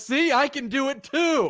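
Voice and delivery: very slow, drawn-out, high-pitched shout in character voice. Yelling back at shouting dwarves in character: yelling in character. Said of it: "Do you yell that in common?".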